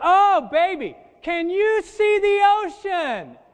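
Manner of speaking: very shrill, loud, drawn-out gushing exclamation. Acting out a new bride's first words while looking outside: imitating a loud bride. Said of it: "And she says it that loud".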